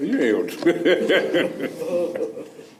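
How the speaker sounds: slow, high, laughing, disbelieving teasing tone.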